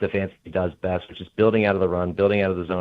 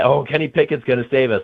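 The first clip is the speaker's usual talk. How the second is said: acted-out heavy sarcasm, scoffing, with faux hope; 6 semitones higher, 5 dB louder than usual. Quoting friends who text to complain, imitating their sarcasm. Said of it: "like sarcastically".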